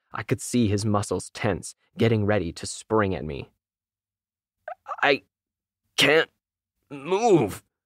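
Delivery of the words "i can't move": high, gagging, choked-out words. A creature on its hind legs, ready to spring, gagging on the words. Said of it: "he gagged on the words".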